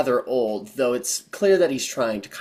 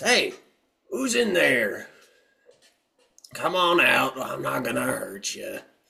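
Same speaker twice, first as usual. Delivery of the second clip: put-on creaky, rough old man's shout; 2 semitones higher than usual. Narrating a scene where a man shouts out, older man's voice. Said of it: "it's a an older voice".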